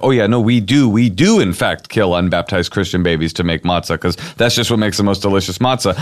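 ordinary talk

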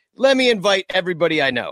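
ordinary talk, nothing marked

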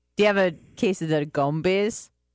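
put-on Jamaican accent. Asking about the gumbies the way schoolmates said it: Jamaican accent. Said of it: "people would always say with a Jamaican accent".

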